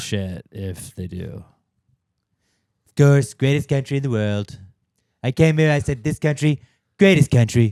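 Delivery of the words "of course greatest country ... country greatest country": loud, pitched-up, rally-style boastful bragging. Riffing on a president and the Gold Cup: Trump impression. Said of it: "our impressions of Trump".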